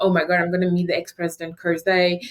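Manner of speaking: ordinary talk, nothing marked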